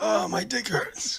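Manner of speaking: very high, creaky, put-on old man voice. Imagining the other speaker putting on an old man voice, he acts it out in a put-on old man voice. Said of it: "putting on an old man voice".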